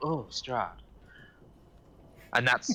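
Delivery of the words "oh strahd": soft, hushed half-whisper under the breath. Voicing a sleeping character who murmurs a name: half-whispering. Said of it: "and he's, like, whispering".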